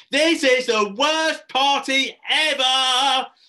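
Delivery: loud, very high, very slow, furious raging tantrum. At a party, flying into a rage, a raging hullabaloo. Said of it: "He hullabalooed".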